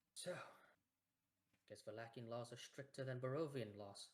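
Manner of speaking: muttered under the breath. Voicing a character as a prisoner wagon passes by: muttering under her breath. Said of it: "under her breath".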